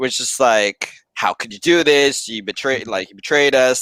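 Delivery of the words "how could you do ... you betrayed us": mock screaming, higher pitch. Retelling her reaction when she realized he left, imitating her screaming. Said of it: "it just becomes a screaming match".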